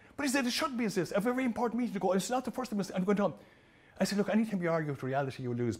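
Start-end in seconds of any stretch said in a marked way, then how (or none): 0.5-3.4 mock-furious, angry tone, much higher pitch. Retelling what an angry man on the platform said to them: retelling an angry complaint. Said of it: "the rope stood in his neck with rage".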